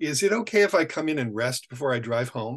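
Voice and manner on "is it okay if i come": plain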